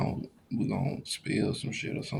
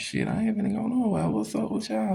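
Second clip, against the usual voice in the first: very high, little squeaky voice, swooping; 12 semitones higher than usual. Retelling when Stephen came in the house, imitating Stephen's squeaky voice. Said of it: "He had like this little squeaky voice".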